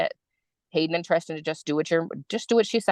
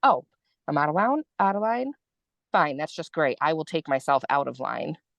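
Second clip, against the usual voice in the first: normal talking voice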